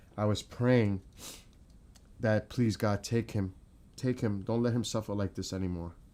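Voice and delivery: pleading voice, close to crying. Speaking live about praying for a suffering loved one, on the verge of tears. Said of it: "I'm going to start crying live".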